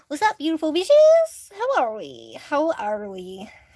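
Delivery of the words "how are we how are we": stock pirate voice, swooping and slow. Streamer greeting members and mods at the start of a live stream, pirate-like voice. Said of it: "I sound like a pirate there".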